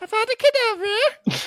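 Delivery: very high-pitched, loud squeaky comedy voice.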